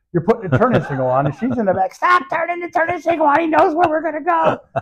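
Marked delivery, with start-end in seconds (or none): 1.9-4.6 acted, high-pitched yelling. Telling a car-ride story, imitating Kim yelling at the driver from the back seat. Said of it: "Kim is yelling at Robbie".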